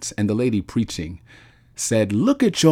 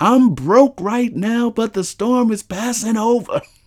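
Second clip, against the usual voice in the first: acted-out, very high, screaming shouted cry; 13 semitones higher, 3 dB louder than usual. Retelling what everyone around them in church was saying: imitating people screaming. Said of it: "everyone around us was screaming".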